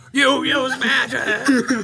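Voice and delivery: loud, high yelling. During a tabletop game, a player yells back at another character: yelling back. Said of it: "I just yell back".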